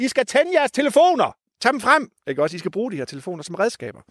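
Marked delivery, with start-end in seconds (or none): 0.0-2.1 shrill shout, pitched way up. A nature guide acts out what he calls to students: acting out shouting to students. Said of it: "Jeg råber til eleverne".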